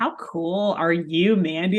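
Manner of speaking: normal talking voice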